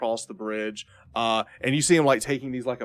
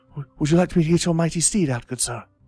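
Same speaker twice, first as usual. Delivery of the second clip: put-on high boy voice, stammered start; 6 semitones higher, 6 dB louder than usual. Voicing the boy who brings the lance to the player: voicing the boy. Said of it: "he comes over and he goes".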